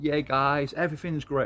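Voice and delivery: fake, put-on British-American accent. Contrasting with a view that everything's great: put-on British American accent. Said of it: "I don't know why I just put on a British American accent".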